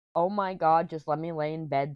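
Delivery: normal talking voice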